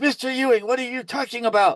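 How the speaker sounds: very high, indignant, angry outburst. Retelling how the judge answered, imitating an angry judge. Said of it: "her face was boiling red".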